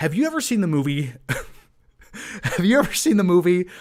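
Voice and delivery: talking with words broken up by laughter. Speaker asks the listener whether they've seen the movie, laughing while talking. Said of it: "I'm sorry I'm laughing".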